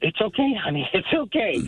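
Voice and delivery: put-on hysterical crying mixed with laughing, tearful. Retelling what a crying woman said while everyone could hear, imitating someone crying. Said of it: "She's crying".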